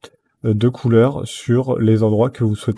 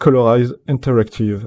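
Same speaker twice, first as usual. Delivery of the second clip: self-mocking put-on English-accent pronunciation. Giving a software tutorial, the speaker names a menu option: self-mocked english accent. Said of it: "avec mon super accent anglais".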